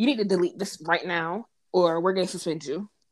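ordinary talk

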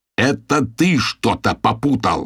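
exasperated, impatient, slow and fed up. The narrator jumps up and yells back at Timchi, losing patience. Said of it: "заорал я".

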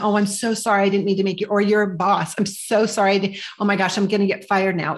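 put-on overwrought, emotional tone. Advising Lisa on taking ownership, the speaker acts out what to avoid: mock emotional apologizing. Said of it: "running off into the emotion of".

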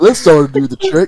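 accurate cartoon character voice. Trying to do one more Patrick, [name] delivers a Patrick Star impression. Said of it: "Do we have the voice actor right here?".

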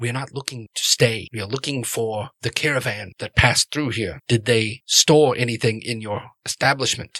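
quiet, just-audible, secretive, hushed tone. Voicing a hooded stranger questioning an innkeeper: hushed tone. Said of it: "you hear them speak in kind of a hushed tone".

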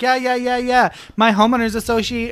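put-on Minnesota accent. Retelling what the lady at the nail salon said, in a put-on Minnesota accent. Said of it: "I have the Minnesota accent on".

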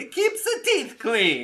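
very high, swooping, big sing-song Italian accent. On a podcast, repeating their line in a Mario-style Italian accent. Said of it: "I went so Italian there, like in like a classic, like Mario".

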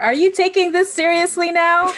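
shrill screaming, pitched very high. Playing a game scene on the edge, screaming at Cora. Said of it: "I'm screaming".

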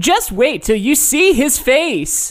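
text-to-speech voice, high and slow. Imitating an app's text-reading voice: TikTok text-to-speech voice. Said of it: "what's the TikTok thing that's like".

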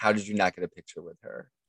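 ordinary talk

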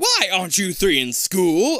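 stern, severe, loud, demanding tone. A policeman questions three children, in a stern voice. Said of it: "A stern voice demands".

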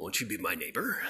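strangely threatening, creepy, low and weird menacing tone. Show how he could say his line to the neighbors, in a weird, menacing voice. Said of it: "in a weird, menacing way".

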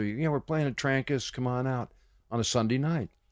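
plain

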